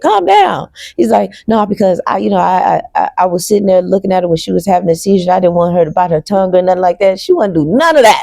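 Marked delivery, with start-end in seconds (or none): none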